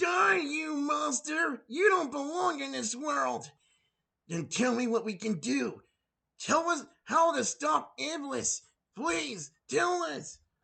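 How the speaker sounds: intentionally terrible acted reading, very high pitch. Mocking a game's voice acting, the speaker shows how to make it worse: deliberately bad voice acting. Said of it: "my example of how I can make him suck".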